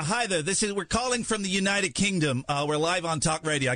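put-on American accent. A British caller phones Applebee's live on talk radio: put-on American accent. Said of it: "i don't know why i'm doing an american accent".

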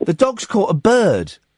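normal talking voice

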